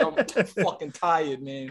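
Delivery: slow, unhurried, dragged-out delivery. Retelling how a friend answers the phone: imitating Percy. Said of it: "that's exactly, dude, like".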